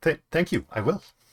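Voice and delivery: high, confused, flustered and flattered, slight stumble. A halfling at the end of the bar accepts what she's given, confused and flattered. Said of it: "she is both confused and flattered".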